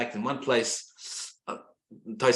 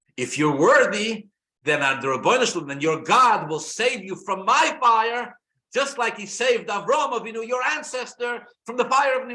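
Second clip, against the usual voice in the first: very high, mocking, sarcastic goading taunt; 10 semitones higher, 3 dB louder than usual. Retelling a challenge made before throwing men into fire: imitating sarcastic taunting. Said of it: "sarcastically, he says to them".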